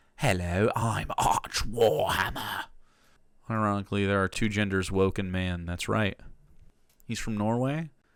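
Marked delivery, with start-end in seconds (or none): 0.2-2.7 very slow, put-on English accent. Imitating someone said to fake an English accent: Arch Warhammer fake English accent. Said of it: "He has a fake accent".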